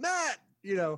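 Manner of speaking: loud, high-pitched yell, carrying far. Retelling calling out to someone across a parking lot, retelling a yell. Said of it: "I just yelled".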